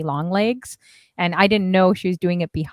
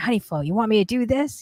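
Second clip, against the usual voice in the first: put-on West Coast accent; 5 semitones higher than usual. Recalling what a woman said, imitating her West Coast accent. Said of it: "her West Coast accent".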